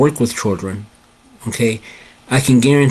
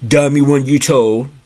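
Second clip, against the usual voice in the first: put-on deep bass boy's voice; 2 semitones higher than usual. Recalling what an eighth-grade boy said, imitating boy's deep voice. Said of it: "when I imitate the voice".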